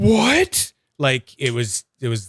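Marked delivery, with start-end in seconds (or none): 0.0-0.7 very high-pitched amazed disbelief, what very high. Retelling first trying a slider from the box: imitating a friend's amazed reaction. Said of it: "you just did an impression of me".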